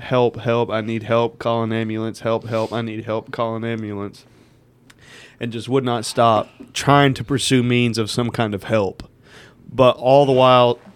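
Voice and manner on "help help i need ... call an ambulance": normal talking voice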